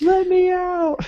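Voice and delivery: put-on little kid's very high-pitched screaming. Retelling how a little brother banged on the door: imitating a kid screaming. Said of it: "He starts screaming".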